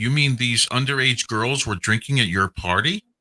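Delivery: ordinary talk, nothing marked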